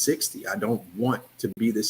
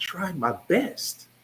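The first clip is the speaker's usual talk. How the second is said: high, tearful, tear-soaked crying voice; 8 semitones higher than usual. Retelling what she said once she started crying, imitating someone crying. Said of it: "And she started crying".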